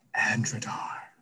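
hushed whisper under the breath, breath only. Voicing a nervous character naming a place: whispering. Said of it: "as he whispers".

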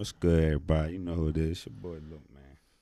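very low, gloomy, deflated, sad-sounding delivery. A host greeting the show's audience, sad-sounding. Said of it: "that sounded real sad".

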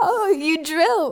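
mock breaking up in laughter and tears, high. Recounting her own past reaction to a man's answer, retelling her own crying. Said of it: "I fucking start crying".

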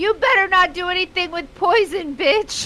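called out with a high pitch. Yelling a warning at a character in the game: yelling. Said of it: "I was just gonna yell".

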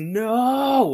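screamed at a high pitch.

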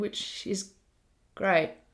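dropped-away, unenthusiastic tone. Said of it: "You sound really enthusiastic".

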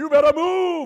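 very high, very loud forceful yell. Speaker acting out praying at a mountain; acting out yelling louder. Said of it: "I start yelling louder at the mountain".

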